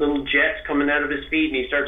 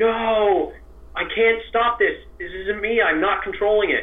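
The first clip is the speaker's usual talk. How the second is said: mock high scream with a long, stretched-out no; 6 semitones higher than usual. Retelling how he screamed while trying to restrain himself, retelling a scream.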